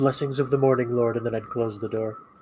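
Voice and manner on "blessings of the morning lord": hushed, soft half-whisper. Playing a character greeting a lord through a door: half-whispering. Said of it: "I'd kinda whisper into the door".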